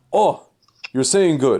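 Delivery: put-on loud shout. Retelling how rabbis yell out when someone teaches something: imitating rabbis yelling out. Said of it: "they'll yell out".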